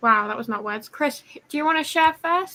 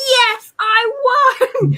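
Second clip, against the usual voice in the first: put-on excited triumphant yell, very high and loud; 12 semitones higher, 5 dB louder than usual. Retelling shouting after winning a game during a serious conversation: retelling own shout. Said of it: "I just shouted, like".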